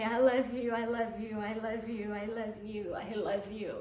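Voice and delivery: weeping, tearful, crying, saying it over and over. Retelling falling on the floor and saying the words: retelling own crying words. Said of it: "cry on my face and just say".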